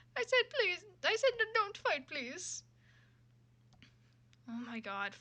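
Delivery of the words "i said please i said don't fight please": put-on Italian man's voice, general Italian accent, very high. Player voicing a character during a game, in a general Italian man impression. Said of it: "I'm just gonna try a general uh, Italian man impression".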